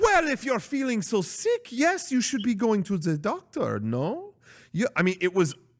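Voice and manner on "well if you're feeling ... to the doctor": badly done, high-pitched woman's voice. Retelling a woman's reply when he said he felt sick, a terrible impersonation. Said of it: "This is a terrible impersonation".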